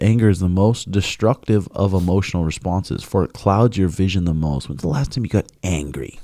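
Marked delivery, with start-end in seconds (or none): none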